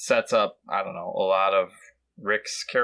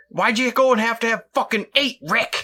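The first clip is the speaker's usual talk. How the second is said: put-on shrill, very high, angry yell; 13 semitones higher, 5 dB louder than usual. Retelling a movie scene in the mirror, imitating Rick yelling at himself. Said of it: "he's yelling at himself in the mirror".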